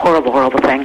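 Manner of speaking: ordinary talk, nothing marked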